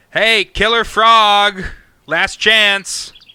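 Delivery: loud, slow yell with "frog" stretched out. Yelling down into a hole at a frog: yelling down a hole. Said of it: "and I yell down into it".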